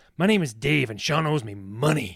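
put-on tough-guy voice. Retelling confronting a shop clerk about money owed: imitating Mister T. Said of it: "I'm going Mister T a little bit".

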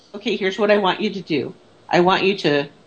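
ordinary delivery

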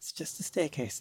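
muttering under breath. Voicing a character heading slowly down a staircase: muttering under her breath. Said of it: "muttering under her breath".

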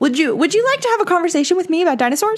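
put-on very kind, gentle, sweet, high polite voice. Retelling a boy's phone calls about dinosaurs: imitating someone speaking very kindly. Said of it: "very kindly".

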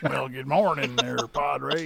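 put-on American accent. Imitating the American accent another speaker just described: Clarkson's American accent. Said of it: "I love when Clarkson does his American accent".

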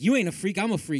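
ordinary delivery

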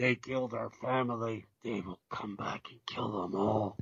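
low, hushed, gravelly movie-trailer announcer voice. Show how the man who voiced so many old trailers sounded, in a gravelly Adolph Caesar voice. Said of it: "He had that gravelly voice".

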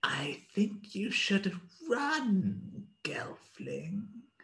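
small, hushed voice. Game master voices an unseen speaker addressing a Gelfling, small quiet voice. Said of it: "You hear a small quiet voice say".

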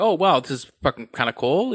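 ordinary delivery

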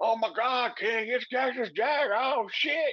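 frantic announcer voice, way up high. Retelling a commentator calling the arrival: imitating j r losing his mind. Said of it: "he's losing his mind".

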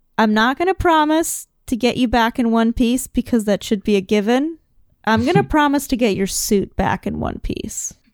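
normal talking voice

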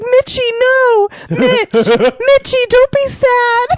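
very high, drawn-out, distraught wailing scream. Retelling a woman screaming to the man she cheated on, imitating someone screaming distraught. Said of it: "she was like screaming to him, like so distraught".

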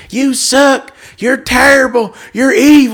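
raw, high, shrill screaming. Retelling someone in the crowd screaming at the speaker, imitating a heckler screaming. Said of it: "just screaming".

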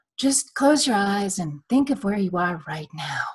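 calm, meditative, soothing voice. Quoting a seminar leader's takeaway from before the race, imitating a soothing voice. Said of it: "he's got this very soothing voice".

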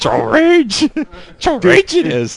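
very high creature voice with swooping pitch. Mocking imagined angry comments in a joke voice: Yoda voice. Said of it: "was that Yoda?".

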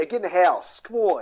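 poor put-on Philadelphia accent. Describing Philadelphia's regional accent, the speaker does a poor Philadelphia accent parody. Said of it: "I'm doing a poor parody of it".

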